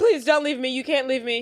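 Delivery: put-on, frantic, hysterical, desperate tone, coming apart. Retelling a scene where a character is still hysterical: imitating someone hysterical. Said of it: "Frank is still hysterical".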